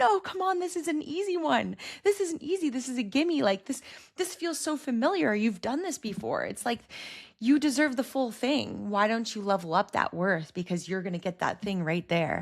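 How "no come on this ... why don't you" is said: high, urgent, insistent, pushing voice. Acting out angels or your higher self urging you on: imitating someone screaming. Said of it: "screaming at you".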